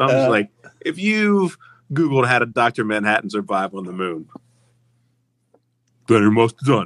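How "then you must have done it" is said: big talking ape's voice. Joking about training a gorilla to deliver punchlines, do a gorilla impression voice. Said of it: "That's my impression of the gorilla".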